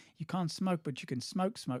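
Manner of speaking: horrible, bad put-on South African accent. Retelling a taxi driver's reply to the speaker's brother, horrible South African accent. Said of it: "it's a horrible South African accent".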